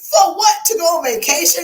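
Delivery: loud, high-pitched, passionate outburst. Speaker complains about a lady wanting to take a break, getting loud. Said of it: "Can you see how I'm getting loud?".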